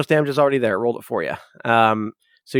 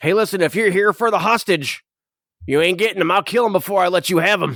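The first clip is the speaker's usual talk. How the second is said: raised dwarf voice calling out, pitched up; 6 semitones higher than usual. Voicing a bearded dwarf in the game, calling out. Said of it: "the bearded the dwarf calls out".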